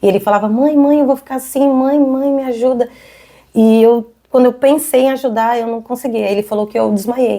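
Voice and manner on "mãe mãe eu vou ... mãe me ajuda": put-on desperate scream and pleading, pitched higher. Retelling her injured son's cries after a car crash: imitating a desperate scream. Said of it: "ele gritava, desesperado".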